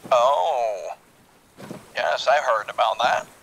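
put-on deep old English gentleman voice. Answering another player over radio comms: old english gentleman voice. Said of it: "Why have you turned into an old English gentleman?".

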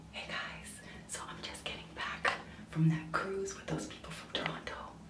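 hushed whisper. Talking to viewers while mom sleeps in the other room, whispering. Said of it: "I'm whispering, by the way, because my mom is sleeping".

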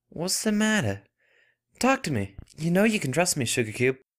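anxious and breathy. In a read story, one friend reassures another who is trembling, worried, breathy. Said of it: "Applejack breathed, taking a worried step towards her".

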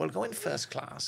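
rough-edged, creaky put-on voice. Quoting what he said on the way up from King's Cross: Rob Brydon impression. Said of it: "this is my impression of Rob Brydon".

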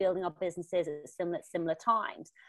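ordinary delivery

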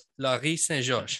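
put-on French accent. Host retrying a guest's name after asking how the French was: French accent. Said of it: "I love the accent".

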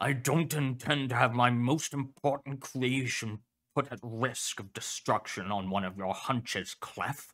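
irritated, snapping, gruff and angry. A narrator reads a character defending his hunch to a colleague, in an angry, gruff manner. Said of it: "You want a suit? The dog asked. Are you sure? [name] is gonna need it, [name] said. Especially if the Coalition starts stepping up their efforts. Professor Kane Pathos [name] gave a low, angry growl. He slapped his front paw".

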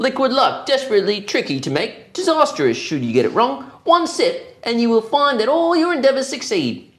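very high, clumsy fake British accent. Reading a movie quote aloud for others to guess who said it, in a bad British accent. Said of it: "In a bad British accent".

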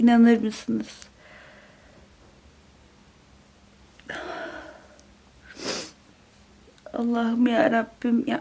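weeping uncontrollably, sobbing heavily. A reader, partway through a book, tells the audience: crying hard. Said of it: "hunharca ağlıyorum".

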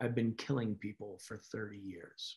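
imitated flat delivery. Retelling a psychologist's opening line on stage, imitating a deadpan delivery. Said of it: "She comes out deadpanned and says".

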